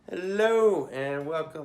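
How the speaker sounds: way over-the-top, loud, high, fake delivery. Pretending to open the show, the host gives a way over-the-top hello. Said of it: "let's go way over the top".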